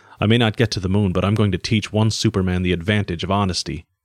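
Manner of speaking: ordinary delivery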